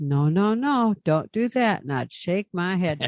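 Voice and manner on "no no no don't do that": play-acted, sweet, gentle baby-talk voice. A former driver recalls talking to them like babies, retelling in a sweet voice. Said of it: "I'd say it in a sweet voice".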